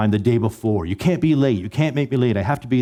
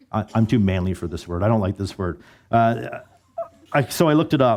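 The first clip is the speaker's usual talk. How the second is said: normal talking voice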